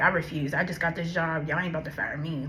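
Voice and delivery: ordinary talk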